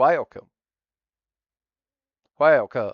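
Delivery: very loud, high, put-on Texas accent. Showing how a word sounds in an American accent: put-on Texas American accent. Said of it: "in your best or your worst American accent".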